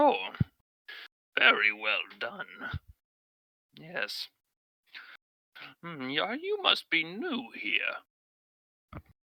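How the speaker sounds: unhurried, slow, lilting, swooping turtle voice. Voicing the turtle who finishes his harvest and greets the group: turtle character voice. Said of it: "he turns over towards all of you and says".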